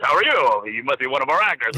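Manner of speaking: laid-back, casual, easy, welcoming tone. Retelling meeting an actor at a meet and greet: imitating Alan Thicke's deep voice. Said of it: "with his great deep voice".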